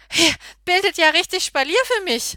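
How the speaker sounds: high, panting, gasping exclamation. Running past a family that has stepped aside, the narrator pants. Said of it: "keuch ich".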